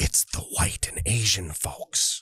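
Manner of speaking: hushed, secretive, confiding whisper. Giving a hint about who is in the minority, whispered. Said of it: "Let me let me whisper it".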